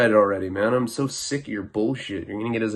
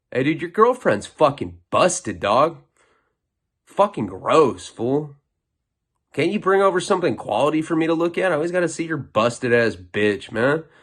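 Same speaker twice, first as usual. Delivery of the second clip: put-on guard-style, mean, insulting taunting tone; 4 semitones higher than usual. Acting out treating a roommate the way prison guards talk, imitating a guard being mean. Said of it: "that's pretty much how, how C Os talk to us".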